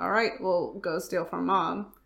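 normal talking voice

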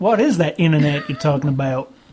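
put-on cartoon sailor accent.

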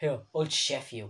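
mocking fake English accent. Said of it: "speaking in an English accent".

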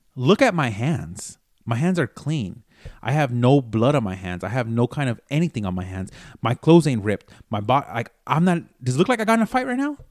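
ordinary delivery

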